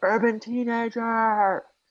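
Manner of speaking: screaming woman's cry, shrill and very high. Describing a suburban scene, imitating a woman yelling. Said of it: "she's yelling".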